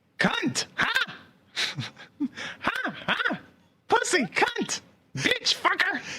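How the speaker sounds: very high, screeching parrot squawks. Doing a best impression of a foul-mouthed parrot when called on. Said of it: "do their best impression of a foul-mouthed parrot".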